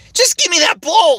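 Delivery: very high, loud, belted cartoon voice. Redoing a past cartoon role's line: his Link voice. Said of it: "a combination of, uh, my Sonic voices too".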